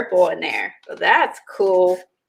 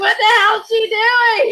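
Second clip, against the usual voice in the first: very high-pitched, shrill yell; 14 semitones higher, 3 dB louder than usual. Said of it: "You know Eileen was yelling at me".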